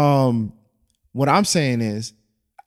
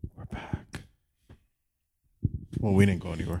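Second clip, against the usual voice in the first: soft, hushed, breathy whisper; 7 semitones lower, 9 dB quieter than usual. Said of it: "why'd you have to whisper that?".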